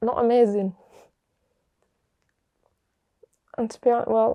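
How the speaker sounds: upset voice, wobbling and wavering. Asked about support systems growing up, answering while upset, voice wobbling. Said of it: "sorry for getting upset".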